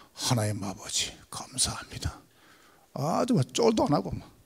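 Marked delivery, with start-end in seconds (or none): 0.2-2.2 put-on elder voice, much lower and quieter. Imitating someone you heard praying without any nerves, in a church elder's prayer voice. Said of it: "그냥 장로인 목소리라".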